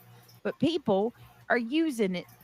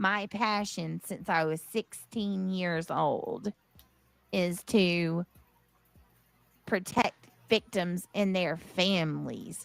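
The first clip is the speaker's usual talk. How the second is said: slow, mocking parody take-off; 3 semitones lower than usual. Quoting what she said about her passion, mocking imitation of her. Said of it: "what did she say?".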